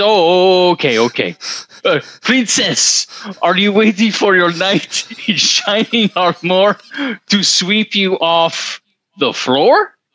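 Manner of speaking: put-on thick French accent, laid on heavy. Retelling the mother's repeated question to the speaker, in a heavy French accent. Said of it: "heavy French accent".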